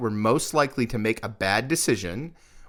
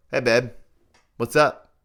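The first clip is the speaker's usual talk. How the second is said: casual, relaxed, easygoing delivery; 4 dB louder than usual. Showing how one answers a call from a wife: casual home phone tone. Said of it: "the difference in the tone and the vocality".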